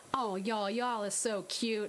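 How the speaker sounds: full, high southern belle accent. Explaining a habit of slipping into a southern accent, speaking in a southern accent. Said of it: "I speak with a southern accent".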